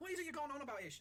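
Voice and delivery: sailor voice, high, loud exasperated yelling.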